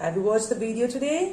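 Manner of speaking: rising tone at the end on today. Showing how the voice goes up when asking: rise on today. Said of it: "My voice is going up".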